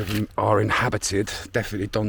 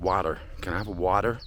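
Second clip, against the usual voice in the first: water in an American accent; 3 dB quieter than usual. Traveler showing how they have to ask for water, in an American accent. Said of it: "Literally saying it in an American accent".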